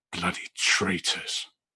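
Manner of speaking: muttered whisper under the breath. A character reacts to hearing a house named: whispering under his breath. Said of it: "he'd just sort of whisper under his breath".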